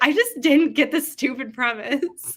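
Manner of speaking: sassy dismissive tone. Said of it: "I thought you meant".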